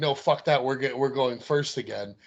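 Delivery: normal talking voice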